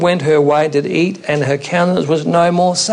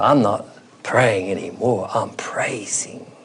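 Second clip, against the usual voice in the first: woman's soft, slow, gently drawn-out French brogue; 7 semitones lower, 6 dB quieter than usual. Retelling a woman's reply about praying for the speaker, imitating Mrs. Moan's French brogue. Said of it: "the French brogue".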